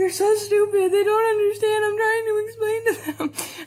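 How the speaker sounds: high, weepy, tearful crying voice. Retelling answering a coworker in the bathroom during a panic attack, retelling own crying. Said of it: "I'm like crying because like people aren't understanding".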